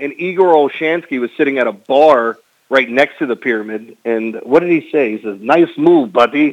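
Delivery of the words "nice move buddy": short line in a put-on Russian accent. Retelling a remark from Igor Olshansky at a bar: imitating Igor Olshansky's Russian accent. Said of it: "with his Russian, Russian accent".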